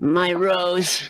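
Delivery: plain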